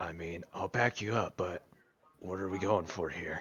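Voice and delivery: muttered under his breath. Game master voicing a companion offering to back the player up, under his breath. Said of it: "just kind of under his breath be like".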